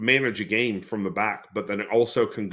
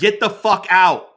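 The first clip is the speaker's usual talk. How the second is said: very loud, high-pitched, furious shrill scream; 9 semitones higher, 8 dB louder than usual. Speaker imagining yelling as a spectator at the ceremony: imagined angry yelling. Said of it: "I'd be yelling".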